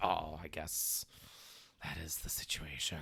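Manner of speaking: very quiet, soft, grave and solemn. Describing being forced into an answer in court, mock-solemn answer. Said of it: "force you into like the solemn answer like".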